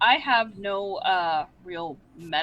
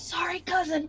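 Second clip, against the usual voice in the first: whispering, higher; 8 semitones higher than usual. Voicing a character while slinging a cat: silent whisper. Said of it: "Silently whispering".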